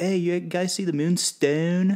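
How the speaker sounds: put-on casual Maryland accent. Act out Jeremy rolling up and talking to the guys, in Jeremy's Maryland accent. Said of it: "Jeremy comes up with the Maryland accent".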